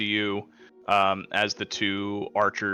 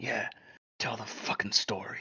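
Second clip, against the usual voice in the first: hushed, very quiet, barely voiced whisper; 10 dB quieter than usual. Storyteller voices Alistar as he whispers to you: Alistar whispering. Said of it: "Alistar just like whispers to you".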